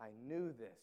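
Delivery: low complaint dripping with disgust. Teaching on the Book of Jonah, speaker voices Jonah's complaint to God, Jonah's disgusted complaint. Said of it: "You hear the disgust in his voice".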